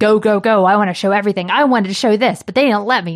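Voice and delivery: grumpy, grumbling, complaining voice. Imitating Nomura eager to show everything: grumpy Nomura voice. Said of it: "That's my new voice for him".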